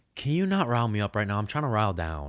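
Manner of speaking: mock dead serious, no joking, swooping delivery. Retelling what Josh said after rolling over: imitating Josh, dead serious. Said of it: "as dead serious as a person can be serious".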